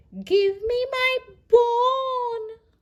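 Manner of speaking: tiny, high, loud voice, "bone" drawn out. Reading a story aloud, a voice calling out: teeny tiny voice. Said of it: "a teeny tiny voice called".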